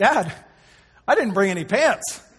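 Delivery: put-on cheerful voice. Retelling what Cooper said on finding no pants in his bag: imitating Cooper saying it cheerfully. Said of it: "he kind of almost cheerfully says".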